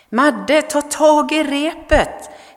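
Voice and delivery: very high, loud, drawn-out stretched yell. Narrator reads voices from the fog calling to a boy clinging to a pier: shouting. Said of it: "skrek rösterna ur dimman".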